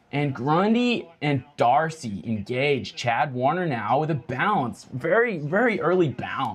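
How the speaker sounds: play-by-play sports announcer voice in an American accent. Commentating a live football match on air: american accent commentary. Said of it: "Commentate the next minute in an American accent".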